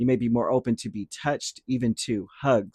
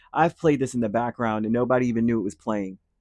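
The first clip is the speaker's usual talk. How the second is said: ordinary talk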